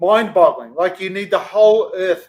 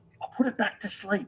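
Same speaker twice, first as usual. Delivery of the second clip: soft, hushed, barely voiced whisper; 2 semitones higher, 11 dB quieter than usual. Putting a brick back to sleep quietly: whispering. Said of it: "we need to whisper".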